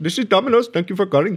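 put-on Indian accent, very high-pitched. Acting out a phone order, the speaker plays the person answering, in an Indian accent. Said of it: "good with the accents".

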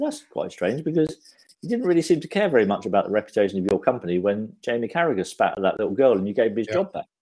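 plain

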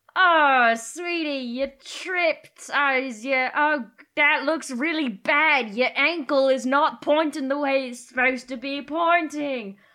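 said loudly. Playing a character who shoves another down, then speaking loudly. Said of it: "And then loudly say".

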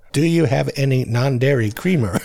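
imitated American accent. Quoting a show's imitations of Americans: imitating an American accent. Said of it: "the imitations of Americans".

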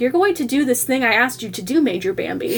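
plain

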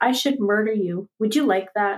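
quiet, calm, considerate voice. Retelling a drunk fellow's threat at the gas station, imitating a quiet, considerate threat. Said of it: "he was very quiet and considerate about it all".

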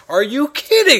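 loud outburst.

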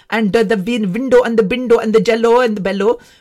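strong, heavy Indian accent, laid on thick. Demonstrating an accent the speaker dislikes, a too deep Indian accent. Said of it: "talk like this one. ... that is too deep Indian accent".

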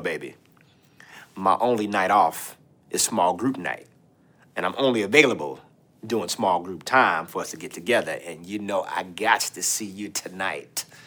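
very low, deep, very soft hushed voice. Warning listeners about Bubba asking to meet on small group night, in Bubba's deep voice. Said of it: "with the deep voice".

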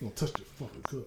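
hushed, firm, authoritative whisper. Acting out a parent warning a child off a cup: with authority. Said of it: "you gotta say it with authority".

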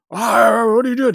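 very high, shrill yell. Retelling a TV episode where the captain yells at a woman, imitating his yell. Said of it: "And he yells at her".

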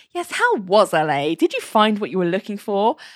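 put-on, really cynical, snide, sneering tone. Retelling a coworker's question at a meeting: imitating a cynical remark. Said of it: "really cynically goes".

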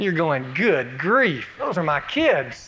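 usual speaking voice

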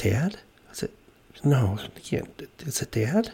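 muttering under breath. After falling out of a chair, [name] starts mumbling under his breath. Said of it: "I'm start mumbling under my breath".

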